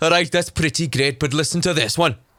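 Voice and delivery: put-on, thick, heavy Welsh accent. Retelling what college metal fans said in the hallway: imitating heavy Welsh accents. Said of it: "really heavy Welsh accents".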